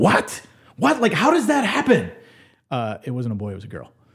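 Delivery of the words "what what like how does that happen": put-on stunned, disbelieving cries, very high-pitched. Retelling a surprising phone call from a wife: imitating wife screaming. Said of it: "I literally just hear my wife screaming".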